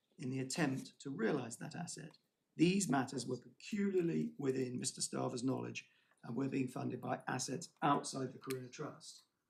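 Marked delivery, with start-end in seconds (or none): none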